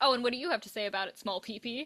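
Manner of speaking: blunt, unhesitating, acted-out delivery. Retelling how a friend answered a peer's snide remark: imitating a friend's blunt comeback. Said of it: "you would look at them and be like".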